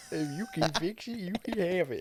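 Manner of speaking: put-on very high, loud, cheery jolly old man voice. Retelling what the old man said about the car, imitating a jolly old man. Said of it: "I love that voice".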